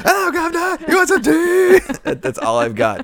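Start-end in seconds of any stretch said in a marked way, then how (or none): 0.0-1.8 shouted, very high-pitched put-on British accent. Showing off a British-man impression in conversation: shouted British accent impression. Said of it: "In my impression".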